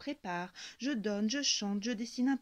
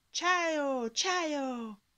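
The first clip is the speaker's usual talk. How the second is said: high shout with ciao drawn out; 5 semitones higher, 3 dB louder than usual. Narrator racing birds up a mountain path, shouting into the wind. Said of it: "Je crie ces mots presque magiques dans le vent".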